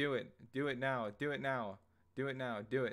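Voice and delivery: anguished, urgent, highly emotional desperate pleading tone. Acting a scene addressed to Marion, highly emotional. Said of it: "you can hear all the emotion in my voice there".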